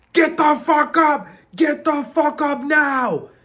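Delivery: put-on drill sergeant yelling, very high, shrieking. Retelling how instructors woke the recruits: imitating drill instructors screaming. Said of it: "they're screaming".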